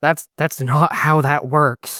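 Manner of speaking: whispering in an acted put-on voice. Replying in character to a companion about sand in stew: whispering in character. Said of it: "I'm gonna whisper back and be like".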